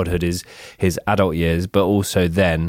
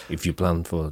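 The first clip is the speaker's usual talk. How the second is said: put-on Russian accent, quieter; 6 dB quieter than usual. Trying a quote out in different accents, starting with a mock Russian accent. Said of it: "That was Russian".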